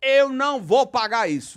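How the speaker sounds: high, loud, slow furious outburst. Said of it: "já subiu a serra".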